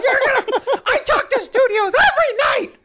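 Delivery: very high, loud puppet-style voice. Imagining Tom Cruise as Miss Piggy, ranting: Miss Piggy voice. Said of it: "imagine Tom Cruise as, like, Miss Piggy being like".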